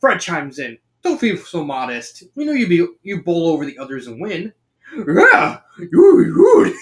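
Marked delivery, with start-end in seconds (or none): 5.0-6.7 sloppy, shrill, loud cartoon dog voice. Narrating the story, voicing the dog's reply to Daphne; bad Scooby-Doo voice. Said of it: "I'm going to be butchering the Scooby accent".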